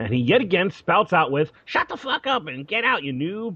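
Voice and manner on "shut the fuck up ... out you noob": rude, high-pitched, angry yelling. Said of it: "he yells again".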